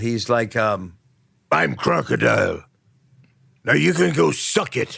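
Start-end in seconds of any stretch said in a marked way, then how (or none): 1.5-5.0 rough growl with swooping, swinging pitch. Describing a pirate character to co-hosts, doing Crocodile's growl voice. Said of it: "he does have the growl".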